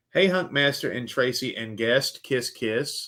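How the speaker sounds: ordinary delivery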